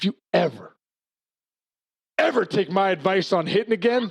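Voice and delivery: grave, no-nonsense, dead serious delivery. Retelling a warning given right in his face: imitating Leland, dead serious. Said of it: "He's dead serious".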